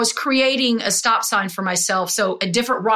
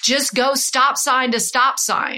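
slow, unhurried, drawn-out calling out; 3 semitones higher than usual. Retelling how a running partner turned around ahead: imitating a friend yelling. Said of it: "turns around and yells at me".

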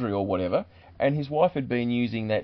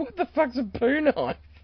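very high-pitched, horrified outburst; 14 semitones higher than usual. Retelling a friend's reply to the speaker's request, quite horrified. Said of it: "quite horrified".

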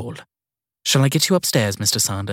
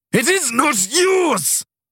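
very high, slow, drawn-out snarl of rage. Narrator reads an enraged man accusing another of stealing his watch, snarling. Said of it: "He snarled".

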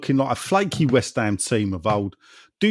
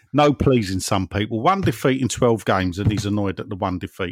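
ordinary talk

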